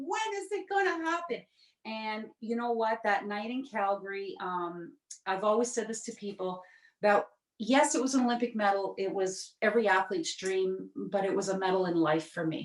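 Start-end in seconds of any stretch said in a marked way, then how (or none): 0.0-1.4 put-on very high, tearful, crying small child voice. Recalling childhood, the speaker acts out their younger self: imitating a crying child. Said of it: "the little kid stamping my feet, crying".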